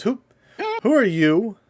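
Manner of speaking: startled, caught off guard, very high and swooping pitch. The butler shines his lantern into the room and sees you: startled. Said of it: "he gets startled at first".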